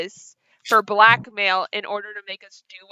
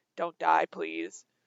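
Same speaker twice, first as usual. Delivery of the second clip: hushed, soft stage half-whisper, up close; 4 semitones lower, 13 dB quieter than usual. Imagining Kira handing over her food to Rebus: half-whispering as Kira. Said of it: "whispering, like, in his ear".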